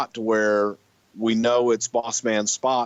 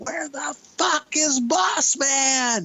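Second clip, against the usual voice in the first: put-on very high, very slow top-of-lungs scream. Retelling a search for a missing wrestler, imitating own top-of-lungs scream. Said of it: "I'm screaming at the top of my lungs".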